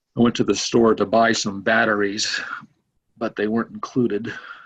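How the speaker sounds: expressionless monotone voice. Retelling a comedian's joke in his dry style: Steven Wright monotone delivery. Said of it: "he says things like very monotone".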